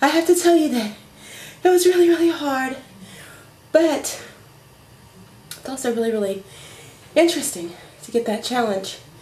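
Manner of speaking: out of breath, winded. Vlogger right after a fitness test, out of breath and wheezing. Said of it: "I'm completely out of breath".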